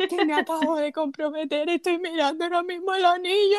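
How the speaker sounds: put-on sobbing voice. Retelling a friend's tearful phone call about her engagement: imitating Gerani crying. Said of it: "Me encanta tu caracterización porque yo sueno así de horrible cuando estoy llorando".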